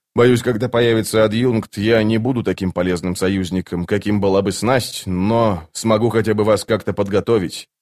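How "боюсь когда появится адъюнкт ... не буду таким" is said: ordinary delivery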